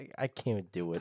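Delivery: normal talking voice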